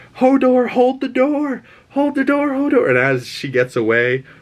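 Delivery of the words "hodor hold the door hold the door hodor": very high, shrill yelling, repeated over and over. Recounting a scene from a show, imitating characters yelling the line. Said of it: "and them yelling".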